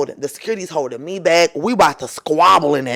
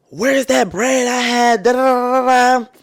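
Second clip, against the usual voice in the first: mock, high, drawn-out, panicky drunk rambling; 7 semitones higher than usual. Retelling how a drunk man panicked over missing bread: imitating a drunk man panicking. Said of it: "He started panicking and was like".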